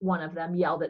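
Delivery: ordinary delivery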